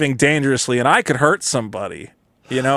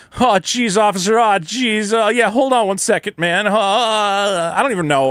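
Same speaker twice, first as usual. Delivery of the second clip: put-on harmless, dim-witted voice, high and slow; 7 semitones higher than usual. Retelling answering a cop's request for papers: retelling playing harmless and dumb.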